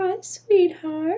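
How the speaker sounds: cutest high, sweet little grandma voice. Doing an impression of a friend's grandma greeting someone, for the friend, in an imitation of a cute grandma voice. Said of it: "the cutest little grandma voice ever".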